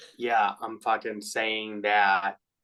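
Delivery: ordinary talk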